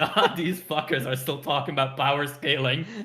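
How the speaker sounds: put-on laughing, cackling old-man voice.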